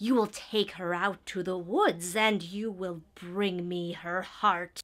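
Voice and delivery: wicked fairy-tale evil queen character voice. Recalling getting into character while reading a script aloud, evil queen voice. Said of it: "my general voice for like evil queen kind of thing".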